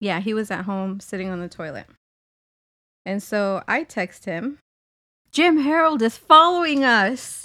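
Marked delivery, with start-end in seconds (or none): 5.3-7.4 loud, higher-pitched, thrilled, excited voice. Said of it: "in my best Dulce voice".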